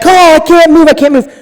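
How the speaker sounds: very high, pleading, crying yell. Retelling a mother yelling for the dad after falling: imitating mom yelling for help. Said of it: "she's yelling for my dad".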